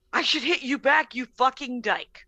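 ordinary talk, nothing marked

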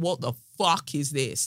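plain

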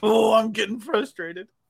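high, theatrical, dramatic big-screen movie-line delivery. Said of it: "Like a movie line".

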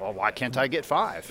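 ordinary talk, nothing marked

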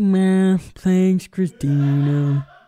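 defeated cartoon donkey voice. Imitating a friend who is like Eeyore: put-on Eeyore voice. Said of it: "He's like Eeyore".

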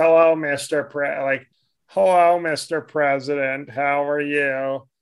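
mock polite, sour-toned, stumbling delivery. Retelling how a man walked up and greeted him, imitating a sour voice. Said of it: "he said in that sour voice".

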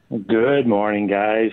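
sounding beaten. A city councillor greets the hosts at the start of an interview, sounding defeated. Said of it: "you sound defeated already".

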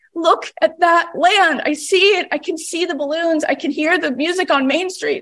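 put-on, imitated crying. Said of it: "he turned to the co-pilot crying".

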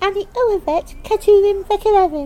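put-on very high, loud, drawn-out rustic child voice. Retelling answering a security officer's question in hebrew, in a rustic child's voice. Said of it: "I answer in my rustic child's voice".

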